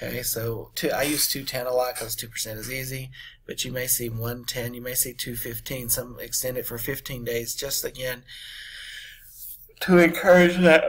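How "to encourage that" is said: words spoken through a high, loud yawn. Explaining early-payment discounts, then speaking while yawning. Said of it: "I'm sorry, I had to yawn there".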